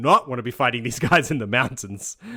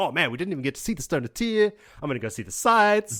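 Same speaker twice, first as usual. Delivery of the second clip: put-on excited voice, higher pitch; 6 semitones higher than usual. Retelling Bukama's words to two listeners: excited Bukama voice. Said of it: "Bukama's all excited".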